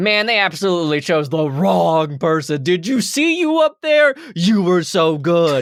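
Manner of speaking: bombastic, loud, high-pitched, gushing hype voice.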